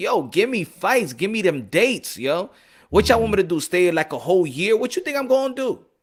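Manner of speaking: put-on pleading, begging tone. Retelling what a boxer said in a post-fight interview: imitating a boxer pleading. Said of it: "meaning he's pleading".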